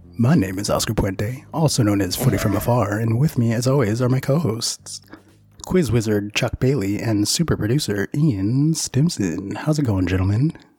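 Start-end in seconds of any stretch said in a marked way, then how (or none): 9.5-10.5 mock seductive voice, much lower and faster. Podcast host greeting his co-hosts at the start of the show, in a sexy voice. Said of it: "that sexy voice".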